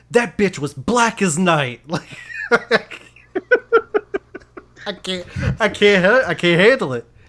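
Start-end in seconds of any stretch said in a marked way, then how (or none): 0.1-1.8 slow, loud, furious yelling. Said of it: "he gets so mad and he just yells".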